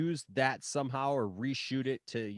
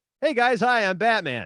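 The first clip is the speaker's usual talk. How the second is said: very high, very loud, easy casual tone, belted; 9 semitones higher, 10 dB louder than usual. Mocking how the actor played Batman the same way: imitating George Clooney as Batman. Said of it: "full Batman suit, and he'd be like".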